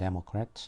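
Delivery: Democrat with heavy stress on first syllable Dem. Vocabulary lesson on the word democrat, stress on first syllable dem. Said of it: "이번에는 이제 강세가 앞에 강세가 오게 되겠죠".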